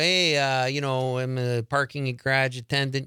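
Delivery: put-on Chicago accent. Retelling an audition as a parking garage attendant, in a chicago accent. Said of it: "So I had the Chicago".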